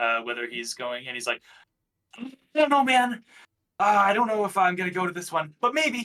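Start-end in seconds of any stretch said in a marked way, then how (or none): 2.2-6.0 high-pitched, offhand, casual buddy voice. Retelling how a friend answers in calls: Brady impression. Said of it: "That's a great Brady impression".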